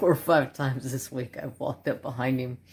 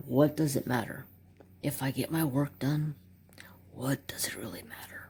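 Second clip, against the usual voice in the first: put-on audiobook narrator voice; 4 dB quieter than usual. Retelling what was said to the boss: Audible narrator voice. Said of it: "I'm sounding like that freaking, that guy reading that Audible".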